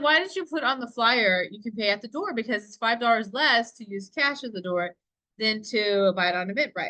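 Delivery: normal talking voice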